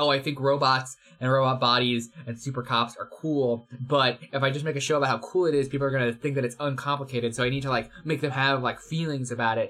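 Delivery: ordinary talk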